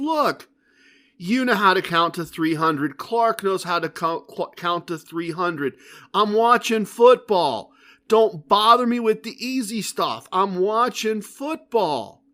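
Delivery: jovial, easygoing, joking, teasing grumble. Retelling how a pit boss waved off a dealer: imitating a joking pit boss. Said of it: "And he's joking".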